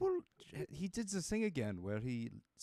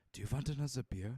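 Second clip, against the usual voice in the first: whispering in a put-on voice. Leaning over a character's shoulder in the game: whispering in character. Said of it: "I'm gonna whisper".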